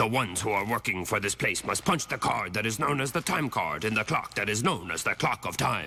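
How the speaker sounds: low, soft, machine-like robot voice. The speaker imitates the Krang brains from a show: robotic Krang voice. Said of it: "they talk like robots".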